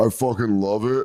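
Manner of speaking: deep-voiced man impression. Describing a video of a guy saying this line: deep male voice impression. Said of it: "this guy with a deep voice going".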